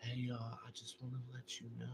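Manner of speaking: barely audible, very quiet, timid mumble. Mocking another speaker for talking too quietly: imitating someone speaking too quietly. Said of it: "when I need to hear you ... you go".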